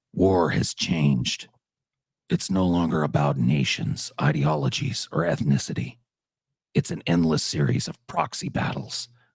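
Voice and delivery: gruff, bassy put-on soldier voice. Reading a requested quote in the character's voice: gruff, bassy Old Snake voice. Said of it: "please do it in his voice".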